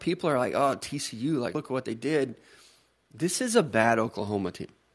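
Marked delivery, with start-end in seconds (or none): none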